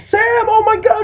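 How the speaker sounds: acted, very high, loud shrieking scream. Retelling a teacher's reaction to a nosebleed in class: imitating a teacher screaming. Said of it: "my teacher started screaming".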